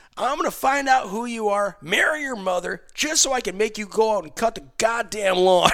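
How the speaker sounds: put-on loud threatening yell. Speaker re-enacts yelling at a kid while playing GTA, retelling his yelling. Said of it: "I'm yelling at this kid".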